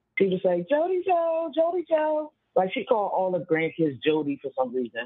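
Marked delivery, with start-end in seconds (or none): 0.6-2.3 put-on very high, drawn-out calling yell. Retelling how the caller's mother called the grandson from upstairs: imitating mother yelling a name. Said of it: "she would yell from her room to downstairs".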